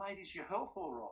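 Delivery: gentle, sweet, saintly, angelic voice. Retelling a man phoning back minutes after hanging up: mock angelic voice. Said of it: "in the most angelic voice".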